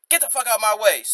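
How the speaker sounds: play-acted rude, hostile snapping outburst. Imitating someone on the street: imitating someone with a bad attitude. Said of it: "bad attitude for no reason".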